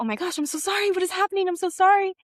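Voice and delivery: play-acted panicked, rattled-off, very high, loud, rushed. Recounting finding him crying under his desk, retelling a panicked apology. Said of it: "I am panicked".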